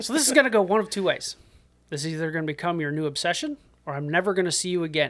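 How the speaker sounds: super crisp, neat way of talking. Retelling what someone said after sitting down next to the speaker: imitating Yeagley's crisp manner. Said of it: "It's a good impression so far".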